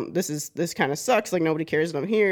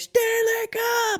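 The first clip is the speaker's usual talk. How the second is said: put-on, shrill, very high-pitched screaming shriek. Retelling how someone suddenly started screaming at him: imitating someone screaming. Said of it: "he just starts screaming at me".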